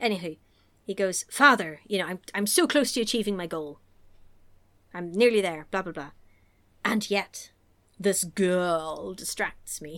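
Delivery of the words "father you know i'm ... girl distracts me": put-on villain voice. Retelling a film scene, doing the Dark Lord: Tim Curry voice. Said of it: "I can't do Tim Curry's voice. I'll do my best".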